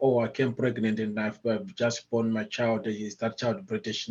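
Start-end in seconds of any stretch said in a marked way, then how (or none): none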